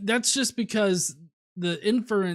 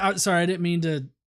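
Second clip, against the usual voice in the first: usual speaking voice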